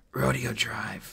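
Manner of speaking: gasping out the words. Mulch, lying on the floor, answers Artemis's remark, gasped. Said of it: "gasped Mulch".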